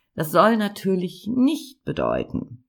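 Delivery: nicht stressed hard with a wide pitch swing.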